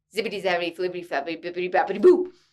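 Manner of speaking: rapid-fire, rattled off very fast. Saying a tongue twister for listeners to practice, super fast tongue twister. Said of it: "Try to say it super fast".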